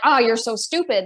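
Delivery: put-on sarcastic, self-mocking tone. Retelling own self-talk after forgetting a cup: imitating own sarcastic self-talk. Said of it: "it's that sarcasm".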